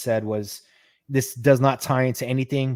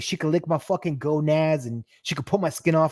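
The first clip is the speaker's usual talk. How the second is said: put-on full-on, laid-on-thick Boston accent; 4 semitones higher than usual. Retelling a post-credit scene line in a Boston accent imitating Johnny Blaze. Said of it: "Johnny does the whole Boston thing".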